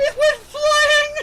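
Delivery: very high, loud, slow, drawn-out excited squeal.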